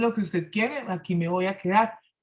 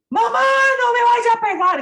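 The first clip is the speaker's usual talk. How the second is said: put-on child screaming, very high, loud, shrill and piercing; 9 dB louder than usual. Mother recounts taking her son to the bathroom to correct him, imitating Josu screaming. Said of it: "gritaba así en el baño".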